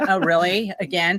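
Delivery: normal talking voice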